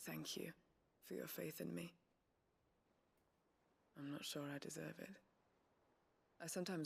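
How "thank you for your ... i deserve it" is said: depressed, downcast tone. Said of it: "you seem very depressed".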